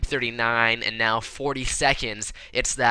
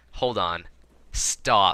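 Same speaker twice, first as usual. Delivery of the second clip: plain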